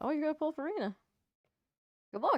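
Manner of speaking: voice breaking. Reacting to someone's plan to pull on a gacha banner, voice cracking. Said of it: "My voice cracked".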